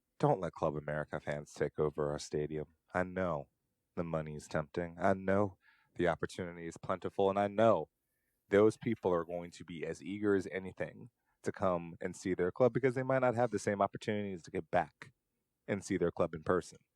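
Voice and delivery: normal talking voice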